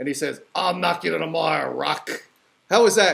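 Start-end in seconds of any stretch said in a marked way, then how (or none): 0.6-2.1 rough-edged, gruff, menacing boxing trainer voice. Closing a radio show segment with an impression: Mickey from Rocky. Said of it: "giving you my impression of one of the characters from Rocky".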